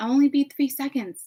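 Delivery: sugary-sweet voice. Retelling an altercation, imitating a woman's sweet voice. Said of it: "her sweet voice literally being".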